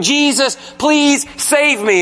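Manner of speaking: put-on, desperate, begging, pleading tone. Describing facing Jesus at the judgment, acting out begging. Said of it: "And you start begging".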